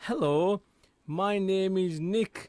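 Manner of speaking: very slow, deliberate, drawn out word by word. Retelling a radio visit, voicing a man introducing himself to a stranger, imitating very slow speech. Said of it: "he says to him very slowly".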